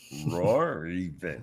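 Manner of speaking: put-on cartoon lion voice. Joking about a very wordy roar, Snagglepuss voice. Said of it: "you did you did Snagglepuss".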